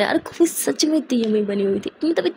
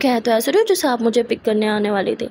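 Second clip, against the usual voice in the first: normal talking voice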